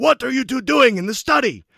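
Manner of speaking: booming, thunderous, very loud, high shout. Retelling a scene, a dad calls down the hallway at two boys, thunderous voice. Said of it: "you hear a thunderous voice from down the hallway".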